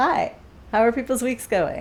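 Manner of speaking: enthusiastic, aggressive, gung-ho, high, loud and eager. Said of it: "I say that very enthusiastically and aggressively".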